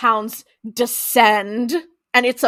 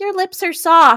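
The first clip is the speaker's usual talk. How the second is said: put-on childlike voice, much higher, louder; 6 semitones higher, 4 dB louder than usual. Recapping a show scene where she kisses Sam: Lilith's childlike voice. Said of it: "Still using this very childlike voice".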